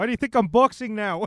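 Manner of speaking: awful put-on Irish accent. Joking about McGregor not wanting a fight, answer as him in a bad Irish accent. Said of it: "the worst Irish accents I've ever heard".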